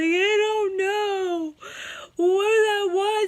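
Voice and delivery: very high, drawn-out sobbing wail. Retelling a call to a friend: imitating herself bawling. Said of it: "And I'm just bawling and having an anxiety attack".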